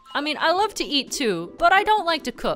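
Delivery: ordinary delivery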